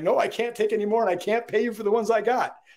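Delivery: mock exasperated shopkeeper yelling. Retelling how a retailer yells at the importer after overbuilding: imitating a retailer yelling. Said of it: "He's yelling at the importer and saying".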